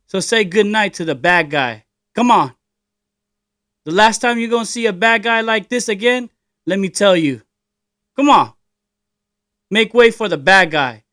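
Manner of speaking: put-on Tagalog-accented English. Reading a script aloud as the bad guy, in a put-on Tagalog accent. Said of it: "Maybe I do in a Tagalog accent".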